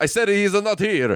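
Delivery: put-on thick Italian accent. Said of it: "He's really laying on an Italian accent".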